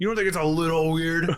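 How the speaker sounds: high-pitched yelling. Imitating a show character yelling at a chair company: imitating someone yelling. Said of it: "whenever he's yelling at the, the chair company".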